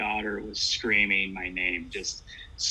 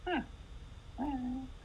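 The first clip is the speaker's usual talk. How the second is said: put-on very high, offhand, casual child's voice; 11 dB quieter than usual. Retelling a screaming daughter who suddenly stops: imitating a child's casual hi. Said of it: "looks at me and stops and goes".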